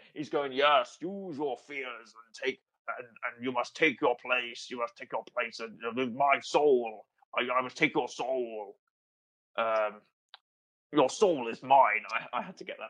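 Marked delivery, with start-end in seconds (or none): 0.5-12.0 dark sci-fi villain voice. Acting out the Undertaker taunting a trapped wrestler: Darth Vader voice. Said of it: "now I'm doing Darth Vader".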